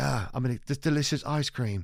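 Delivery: high, put-on British accent. Retelling a man's bit about the guy who invented ice cream, imitating his British accent. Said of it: "He always does the British accents".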